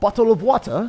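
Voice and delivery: put-on bad British accent. Admitting he is terrible with accents, trying a bad British accent. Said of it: "like British accent".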